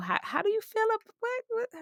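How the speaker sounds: very high, soft, eager pleading tone.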